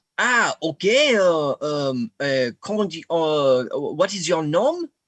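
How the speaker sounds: put-on incredibly thick French accent. Answering a caller who says he's a friend from the Americas, thick French accent. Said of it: "with an incredibly thick French accent".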